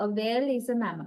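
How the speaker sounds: pitch falls at the end of mammal. Demonstrating statement intonation with an example, falling intonation on 'mammal'. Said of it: "Our fish level is falling".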